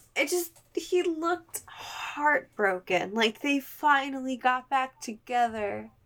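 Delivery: high, choked-up, verklempt voice. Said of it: "I'm getting a little verklempt".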